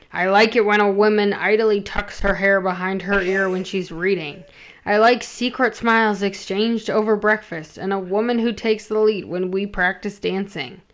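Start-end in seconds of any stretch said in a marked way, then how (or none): none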